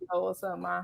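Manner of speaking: acted smooth-talking voice. Acting out the edgy guy you bring home: imitating a smooth guy. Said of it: "he nice and stuff and kinda smooth".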